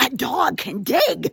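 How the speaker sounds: thrilled, very excited, high and loud. Showing learners how a sentence can end with an exclamation, very excited. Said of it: "Unless I want to say it very exciting".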